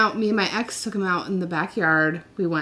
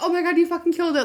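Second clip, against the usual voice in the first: mock sobbing scream, very high; 10 semitones higher than usual. Retelling the moment the ex kicked a woodchuck, retelling screaming and crying. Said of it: "I was like screaming and crying".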